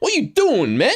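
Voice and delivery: very high, put-on taunting voice.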